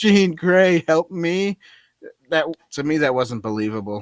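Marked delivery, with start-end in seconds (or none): 0.0-1.6 slow, high, drawn-out fake blubbering whine. Mocking a movie scene where the character cries out: mock crying as Professor X. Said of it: "Professor X is crying, going".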